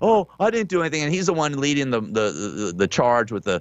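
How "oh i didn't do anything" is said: mock sobbing, blubbering whine, high and whiny. Retelling a march leader saying the government is after him: mock crying, whining. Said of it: "he starts crying like a little bitch".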